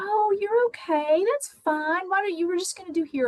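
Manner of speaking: put-on sweet, gentle, condescending cooing baby talk. A speaker shows how people may talk to someone older, using baby talk. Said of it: "change our voice and use kind of baby talk".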